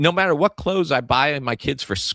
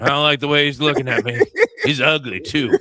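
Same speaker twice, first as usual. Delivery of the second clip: ordinary talk, nothing marked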